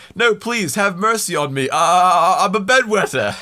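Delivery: loud, high pleading yell with "I'm" stretched long. Retelling a film scene, pleading with soldiers: imitating Jack yelling a plea. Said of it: "yelling at the soldiers behind him".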